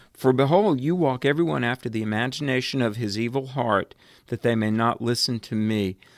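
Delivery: ordinary talk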